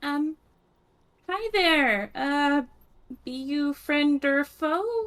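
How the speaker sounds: calling out loud. In a tabletop game, a player's character calls out to a gnome, calling out. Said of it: "She's gonna yell out".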